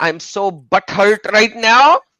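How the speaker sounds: very shrill, very loud Pakistani accent. Chatting on a stream about quitting YouTube videos, Pakistani accent. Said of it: "speaking in a Pakistani tone".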